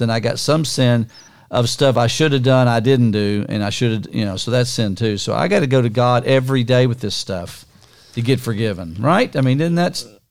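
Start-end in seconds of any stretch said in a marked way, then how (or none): none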